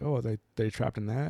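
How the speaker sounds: normal talking voice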